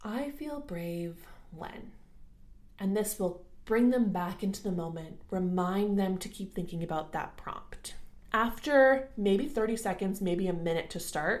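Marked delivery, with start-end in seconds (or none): 0.0-1.9 very gentle, soft, calm voice. Demonstrating the prompt to say every few seconds over calming music, ever so gently. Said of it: "just ever so gently".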